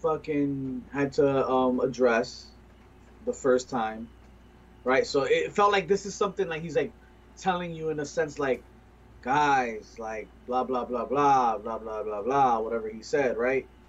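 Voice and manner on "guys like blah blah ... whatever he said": mock tired, dismissive tone, much lower. Retelling how a man addressed the group, mocking a tired dismissive tone. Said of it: "like it was so dismissive".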